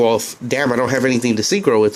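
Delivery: ordinary talk, nothing marked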